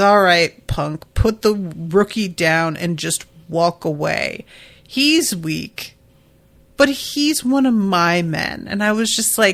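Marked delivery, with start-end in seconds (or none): none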